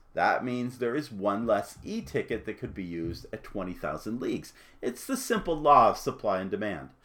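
plain

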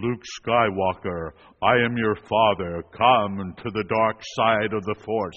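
growling villain voice, muffled through an oxygen mask. Speaker recalls quoting Darth Vader to someone, in a James Earl Jones imitation. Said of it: "in my best Earl James Jones, you know, imitation".

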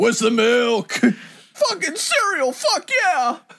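very high, loud put-on voice. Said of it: "the fucking [name] voice".

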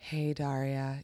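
very soft, low, cool, uncaring, apathetic voice. Recalling a 90s cartoon crush with another speaker, imitating Trent's apathy voice. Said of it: "that like apathy voice that was so hot in the 90s".

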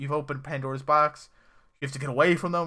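alarmed, frantic, panicked, freaked-out delivery. Retelling a scene where Lenny panics about the numbers: imitating someone freaking out. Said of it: "he starts freaking out".

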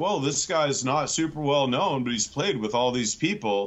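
put-on, condescending, belittling, demeaning, dismissive tone. Quoting what the other speakers said at the show's start: imitating someone in a demeaning tone. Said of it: "so demeaning".

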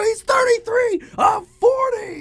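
very high, very slow, drawn-out excited shout. Retelling screaming at the TV after a blown save: retelling screaming at the TV. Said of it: "And I go".

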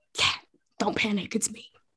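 hushed, stealthy whisper under the breath. Sneaking up invisible on a companion in a game: whisper. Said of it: "and I whisper".

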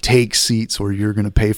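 mock angry, mad-sounding voice. Retelling instructors ordering the class to sit: imitating angry instructors. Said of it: "And then they got mad".

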